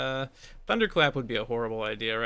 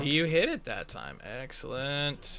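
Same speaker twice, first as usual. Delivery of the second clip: drawn-out, very slow, genuinely amazed and admiring. Reacting as another player finally lands a hit, sounding surprised. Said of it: "You don't have to sound so surprised".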